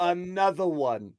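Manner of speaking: big, loud hype DJ call voice. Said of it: "In my best [name] voice".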